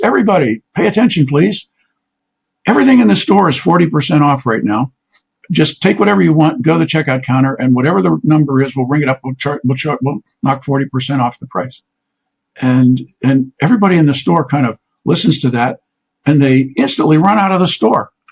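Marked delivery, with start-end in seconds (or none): none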